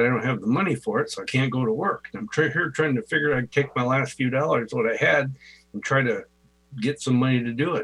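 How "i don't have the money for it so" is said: ordinary delivery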